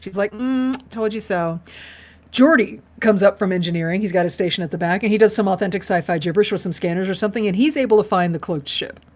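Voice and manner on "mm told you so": mock smug told-you-so gloat, soft, very slow, drawn-out. Retelling a character's reaction after being proven right: imitating someone smug. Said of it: "Kalar's being a little smug about it".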